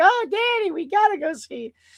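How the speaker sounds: put-on little kid losing it, high, swooping, excited. Imagining little kids begging to see a movie: imitating an excited little kid. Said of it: "little kids saw it and now they're losing their minds".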